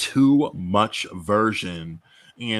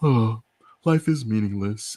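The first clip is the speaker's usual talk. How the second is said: put-on really upset, sad, despairing, downcast voice; 2 semitones higher than usual. Describing a meme with two people on a bus: acting upset and sad. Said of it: "really upset and sad and says".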